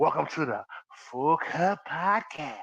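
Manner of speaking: put-on porn-style voice. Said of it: "Y'all sound the same".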